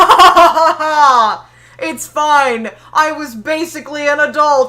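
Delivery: mock-dismissive laughter. Speaker acting out their past self answering people urging them to take it seriously, retelling laughing it off. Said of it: "Stop laughing about your trauma".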